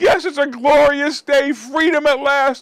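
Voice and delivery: fake choked up. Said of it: "I think I'm gonna cry".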